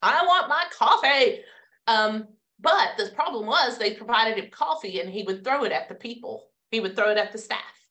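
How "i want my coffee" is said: slow, drawn-out, high-pitched yell. Retelling how a care-home resident demanded coffee: imitating a resident yelling. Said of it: "would be yelling like that?".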